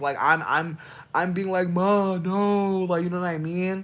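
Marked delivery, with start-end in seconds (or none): 1.7-2.8 begging, pleading cry, high and raised. Retelling getting beaten by mom as a child: imitating own past pleading. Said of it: "pleading while I'm getting beat".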